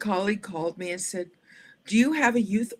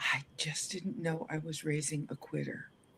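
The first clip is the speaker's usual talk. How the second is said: barely audible, very quiet, hushed murmur; 5 semitones lower, 11 dB quieter than usual. Retelling what mom said outside the door: quiet voice. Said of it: "in a quiet voice".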